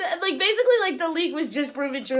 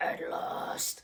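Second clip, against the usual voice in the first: poor put-on villain voice, whispered, breathy, faint, hushed. Retelling a movie's first line of dialogue: horrible Emperor impression. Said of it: "my horrible Emperor impression".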